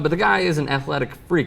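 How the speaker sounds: ordinary delivery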